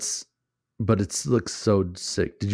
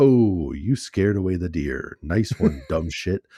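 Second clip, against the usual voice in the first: mocking, snide, mean game announcer voice. Describing a hunting game's announcer that mocks the player, in a mean mocking announcer voice. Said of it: "that announcer voice that just comes in".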